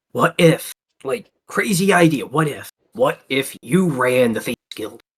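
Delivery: whispered, in a character voice. Leaning in to Inchy and pitching a crazy idea: whispering in character. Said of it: "I'm gonna lean in and whisper".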